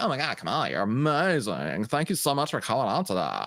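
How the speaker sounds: put-on, over-sweet, adoring, gushing, fawning tone. Imitating how reporters would treat Kamala: imitating gushing reporters. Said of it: "They'd be like".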